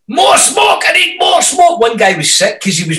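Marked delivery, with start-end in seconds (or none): 0.2-1.8 very high, screeching, screamed. Speaker retells a behind-the-scenes wedding shoot with smoke: retelling a scream. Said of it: "and I'm screaming like a man".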